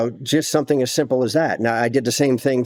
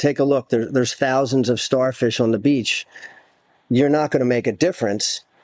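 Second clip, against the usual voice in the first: ordinary delivery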